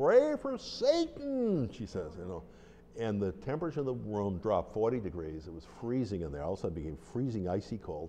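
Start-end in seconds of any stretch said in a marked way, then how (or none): 0.0-1.7 very high, swooping, unearthly screech. Retelling what a woman they had never met said during prayer intentions: screeching voice from beyond the tomb. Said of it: "she screeches in a voice that came from beyond the tomb".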